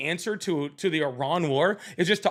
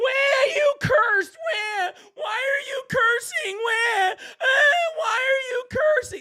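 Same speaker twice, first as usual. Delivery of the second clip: mock whiny, whining voice, higher; 4 dB louder than usual. Mocking the other speaker for complaining about cursing: mocking whiny imitation. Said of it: "That's literally what you sound like".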